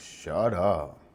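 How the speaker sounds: put-on mutter under breath. Retelling telling a screaming kid on a plane to stop, muttered under breath. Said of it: "to myself under my breath".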